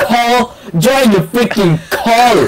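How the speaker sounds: shrill, loud, high-pitched, full-volume yelling. Telling a teammate to join the voice call: loud yelling. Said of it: "Ow, my ears, [name]".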